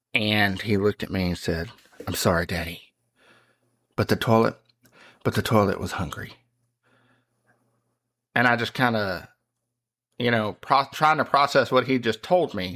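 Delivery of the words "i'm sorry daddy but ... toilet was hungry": grave, serious, earnest, matter-of-fact tone. Retelling a four-year-old's reply to daddy: imitating a serious tone. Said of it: "just a serious tone".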